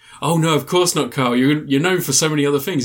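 ordinary talk, nothing marked

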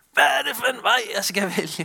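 loud, high, frantic panicked shout. Speaker recalls shouting in the car at a motorway junction, retelling own shout. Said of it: "Så råber jeg".

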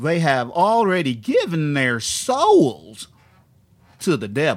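put-on slow, loud, dumb Southern preacher accent. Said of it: "I'm just gonna do a dumb Southern accent".

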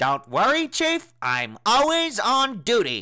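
very high, swooping cartoon detective voice. Offering to show it off, the speaker does an Inspector Gadget impression. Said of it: "my Inspector Gadget impression".

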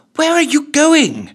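very high-pitched, hissed delivery. Reading a story, the narrator voices Ellen calling after Cleanta, hissing. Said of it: "she hissed".

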